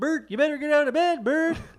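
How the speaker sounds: very high, very loud shouted puppet voice. Retelling a brother's morning wake-up at the door: Ernie voice. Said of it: "a Bert and Ernie impression".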